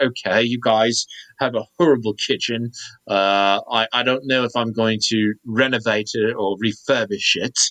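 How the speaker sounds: plain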